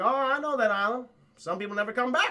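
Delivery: put-on Down East Maine accent. Retelling a film's scene, quoting the pilot: put-on Maine accent. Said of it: "Got, like, a Maine accent or something".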